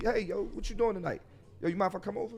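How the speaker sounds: friendly, relaxed. Showing how to approach someone with your guard down, calm, not angry. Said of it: "You don't sound like you angry".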